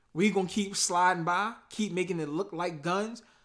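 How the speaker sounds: ordinary delivery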